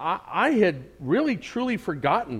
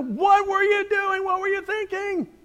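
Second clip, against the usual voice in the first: imitated panicked, upset tone, higher. Acting out a mother finding her missing son: imitating a panicked scolding mother. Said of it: "not gonna come with a sweet tone of voice".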